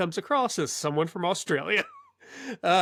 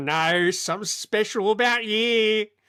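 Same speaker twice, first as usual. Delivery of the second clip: slow, unhurried, easy put-on voice, drawn out; 3 semitones higher, 4 dB louder than usual. Retelling a conversation, quoting Paul Hogan's reply: imitating Paul Hogan. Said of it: "That was exactly how he sounded".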